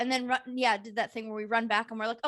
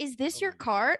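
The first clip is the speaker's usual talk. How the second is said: mock shocked, stunned tone; 3 semitones higher than usual. Retelling confronting a shopper about his cart: imitating own shocked question. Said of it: "I said that with shock".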